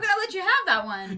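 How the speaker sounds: condescending tone. Repeating the co-host's remark back at him, mocking a condescending tone. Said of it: "in the most condescending tone possible".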